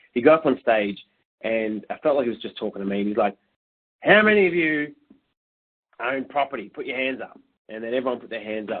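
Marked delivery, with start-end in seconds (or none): 4.0-7.4 put-on broad, strong Australian accent. Retelling a seminar speaker asking the crowd a question: imitating Peter Spann's strong Aussie accent. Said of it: "I try and do my best imitation here".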